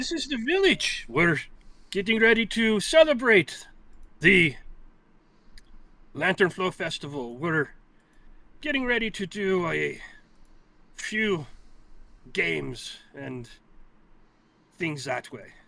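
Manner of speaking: loud, swooping, stately, regal old badger voice. The game master voices the village mayor answering the players: old regal badger voice. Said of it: "you see a crowd of animal folk gathering around a old regal badger. / you see a crowd of animal folk gathering around a old regal badger. / he turns to you. / you see a crowd of animal folk gathering".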